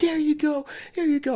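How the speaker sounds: very high, weepy, tearful delivery. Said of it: "I literally start crying".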